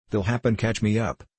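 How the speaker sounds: ordinary delivery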